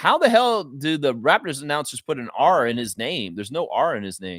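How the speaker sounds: plain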